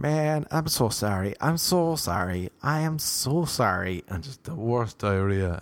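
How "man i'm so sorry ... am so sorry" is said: very slow, dragging, drawn-out delivery. Retelling how someone kept apologizing: imitating someone apologizing over and over. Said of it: "the way he kept saying".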